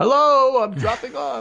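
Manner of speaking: high, loud yell. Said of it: "stick your head in the slot and yell".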